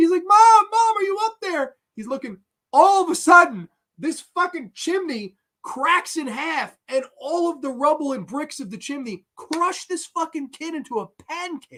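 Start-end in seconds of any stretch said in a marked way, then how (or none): 0.2-1.7 high, loud, shrieking screams. Retelling a movie scene where the kid calls for his mom: imitating a screaming kid. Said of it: "screaming like a girl".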